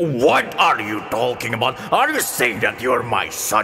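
dragon character voice. Speaker voices the dragon answering in the game story: dragon voice. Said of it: "dragon says".

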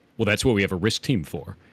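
mock-smug, put-on smug tone. Retelling a C-suite guy answering a question, retelling a smug reply. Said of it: "real smugly".

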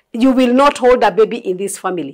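normal talking voice

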